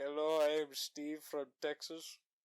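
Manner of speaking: put-on Indian accent. Joking about tech support agents who never use their real names, imitating Indian tech support worker. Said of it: "he's always like".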